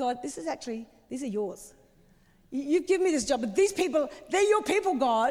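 play-acted, pointed, openly sarcastic tone. Acting out Moses speaking to God: sarcastic Moses voice. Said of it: "I can almost hear the sarcasm".

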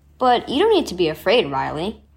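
ordinary delivery

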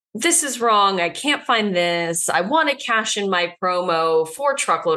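usual speaking voice

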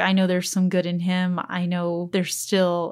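ordinary delivery

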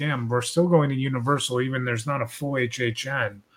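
ordinary talk

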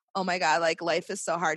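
ordinary delivery

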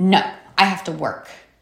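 mock snapping, snappy put-on tone. Retelling his answer when she asked him to lie down with Harper, imitating someone snapping. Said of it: "he just snaps at me like".

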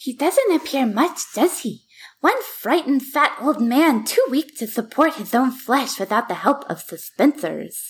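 put-on woman's voice impression. Reading a quote aloud as an impression of a woman's voice. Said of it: "I'm going to do my impression of her real quick".

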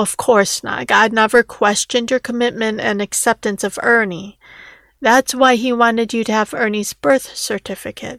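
ordinary delivery

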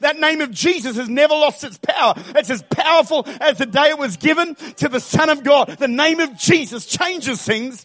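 loud, excited, fired-up preacher-style yelling. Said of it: "I know I'm yelling".

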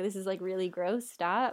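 ordinary delivery

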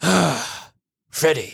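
put-on, acted disappointed tone. Recalling an old-school professor addressing Freddy, imitating Professor Shun's disappointment. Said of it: "He's always so disappointed".

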